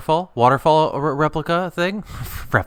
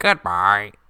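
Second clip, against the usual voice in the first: put-on talking dolphin voice; 5 semitones lower than usual. Showing how a dolphin would say goodbye: dolphin voice. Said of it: "that's a dolphin voice".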